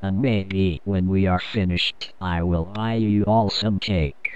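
put-on text-to-speech voice. A reviewer keeps ranting to viewers about a show, in a text-to-speech voice. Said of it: "Now I have no choice but to continue this review sounding like [name] or a male version of [name] from [name]. So sit down and take a load off. If I have to sit and watch this god-awful piece ... I thought it would also be funny to incorporate a text-to-speech program to make it look like I'm talkin".

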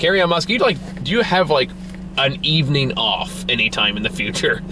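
ordinary talk

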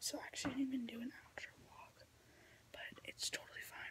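hushed whisper. Talking to vlog viewers, whispering. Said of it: "Sorry if I'm whispering".

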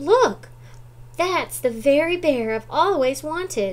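high, loud exclamation. In a story read aloud, a little girl speaks to her mother, exclaiming. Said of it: "she exclaimed".

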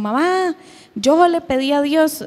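high, tearful voice, crying and angry.

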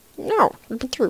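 soft, strange, offbeat voice. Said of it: "That was a weird voice".

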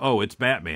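ordinary talk, nothing marked

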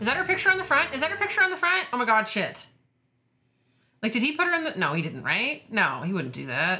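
frantic, spiralling, panicked alarm. A viewer reacting to an episode, worried about Grace: freaking out. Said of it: "I'm sorry, I'm freaking out".

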